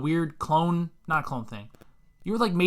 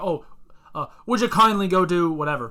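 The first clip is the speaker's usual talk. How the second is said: easygoing, casual Irish brogue; 4 dB louder than usual. Retelling what a game character says to the player: irish accent. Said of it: "He's an Irish guy with an accent".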